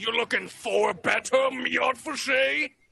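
high, loud, booming giant voice. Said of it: "As a giant".

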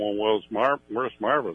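ordinary delivery

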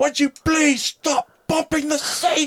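put-on very high, sharp, intense British accent. Retelling what a man said on a flight to the UK, in a put-on British accent. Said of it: "this guy with his Brit accent".

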